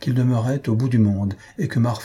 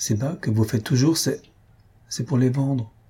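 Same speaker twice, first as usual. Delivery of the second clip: ordinary delivery, nothing marked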